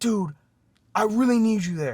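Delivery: put-on panicked voice. Retelling how he asked for help while panicking: imitating someone panicking. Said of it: "he's, like, panicking".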